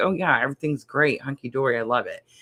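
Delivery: acted, sarcastic tone. Acting out someone's answer when asked if everything is okay: acting out a sarcastic reply. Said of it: "it's so full of sarcasm".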